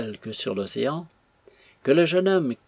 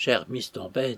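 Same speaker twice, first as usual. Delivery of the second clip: plain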